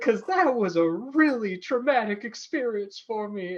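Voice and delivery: imitated Southern accent. Retelling a woman's question to meditation instructors: imitating a Southern accent. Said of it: "I think she had a Southern accent".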